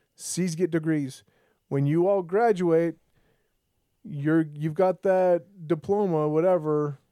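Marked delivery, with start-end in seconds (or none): none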